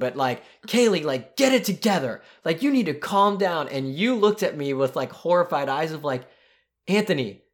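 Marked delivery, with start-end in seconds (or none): 0.0-3.7 half-yelling, near-shout delivery. Retelling how they spoke to a crying, screaming girl, retelling a near-yell. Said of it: "I start like yelling at her".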